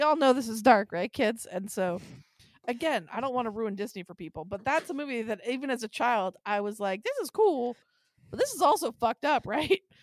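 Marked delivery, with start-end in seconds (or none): 7.0-9.8 silly put-on goofy voice, pitched up. Recalling watching a Disney movie as a child: goofy voice. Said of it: "Why did you just have a goofy voice?".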